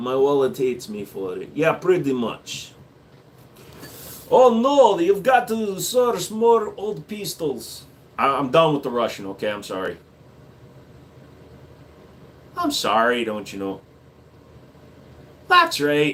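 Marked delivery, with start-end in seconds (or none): 9.5-16.1 talking like a Canadian. An irish guy apologizing while doing a voice, in a canadian accent. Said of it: "I'm an Irish guy that's talking like a Canadian".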